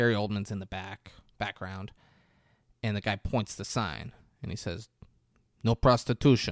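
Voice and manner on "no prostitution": put-on Russian accent, short and plain delivery. Retelling what the guy said as he pointed at the sign, in a russian accent. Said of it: "He has a Russian accent".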